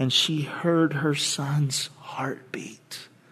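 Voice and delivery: hushed, slow, soft whisper.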